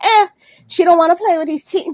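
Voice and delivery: put-on elderly voice. Mocking relatives who throw things out: imitating west indian ancestors. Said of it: "my West Indian ancestors".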